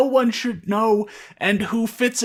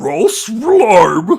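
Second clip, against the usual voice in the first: booming cartoon dog voice, belted, pitch swinging wildly; 9 dB louder than usual. Reading a fan story aloud, voicing the dog's line: Scooby-Doo voice. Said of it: "I can't actually do the Scooby voice if, like, it doesn't start with an R".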